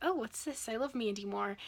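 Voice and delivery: ordinary talk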